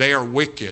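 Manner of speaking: wicked hit hard, as if in capitals. Saying it so you see it in capital letters: heavy stress on wicked. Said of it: "I'm trying to pronounce it in such a way so you're seeing the word in all capital letters".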